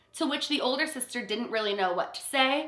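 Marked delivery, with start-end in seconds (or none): none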